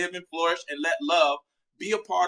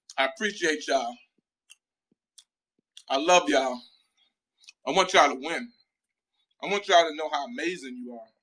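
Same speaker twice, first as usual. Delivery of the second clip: chewing while talking, mouth full. Speaker cheers on listeners while eating, talking while chewing. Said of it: "Forgive me for chewing".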